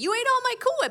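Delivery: very high, shrill, loud holler. Retelling how the husband yells from the kitchen: imitating husband yelling. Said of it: "yells from the kitchen".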